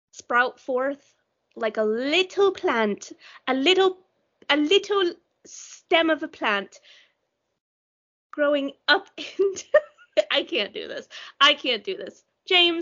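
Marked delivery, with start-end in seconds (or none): 0.1-9.6 fake put-on British accent. Sending listeners off with a plant metaphor: put-on British accent. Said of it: "you're using your fucking British accent".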